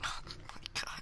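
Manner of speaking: soft, frustrated whisper.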